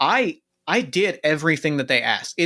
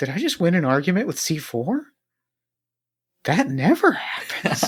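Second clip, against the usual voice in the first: mumbling quietly, higher pitch; 3 semitones higher than usual. Playing a character who looks back and finds the other gone: muttering under breath. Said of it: "I just mutter under my breath".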